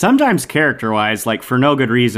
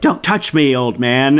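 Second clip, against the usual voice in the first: mock angry, frightening and scary-sounding; 3 semitones higher than usual. Retelling a movie scene where a character gets scary mad: imitating scary anger. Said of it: "gets mad at one point, like, you know, scary mad".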